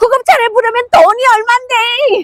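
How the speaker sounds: very high, tearful crying voice. Retelling what she said to her husband through tears: retelling own words while crying. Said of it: "제가 막 울면서 그랬어요".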